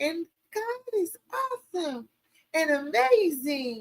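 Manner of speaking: very frail, soft, faltering, halting voice. Describing someone speaking on stage, imitating her very frail voice. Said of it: "she has this very frail voice. She talks like this".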